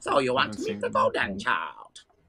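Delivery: sing-song character voice, pitch swooping all over. Doing an impression for the others after introducing the actor: James Hong voice. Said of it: "He's got that very distinct voice".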